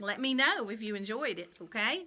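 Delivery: ordinary delivery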